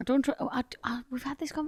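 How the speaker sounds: soft, secretive whisper.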